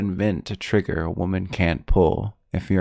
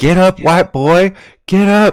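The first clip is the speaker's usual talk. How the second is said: imitated yell, higher and louder; 11 semitones higher, 11 dB louder than usual. Retelling a movie scene where a character yells at another: imitating someone yelling. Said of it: "he's just yelling".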